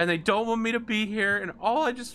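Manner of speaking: high, loud, tearful pleading tone, about to cry. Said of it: "she looks like she's about to cry".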